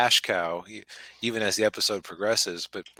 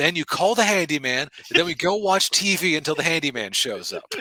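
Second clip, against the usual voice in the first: put-on angry, condescending voice, higher and louder; 7 semitones higher, 5 dB louder than usual. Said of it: "talking so condescendingly to them".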